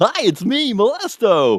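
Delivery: very high, loud, sing-song creepy clown voice.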